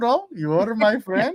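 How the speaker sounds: put-on Indian accent. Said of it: "that's a pretty good Indian accent".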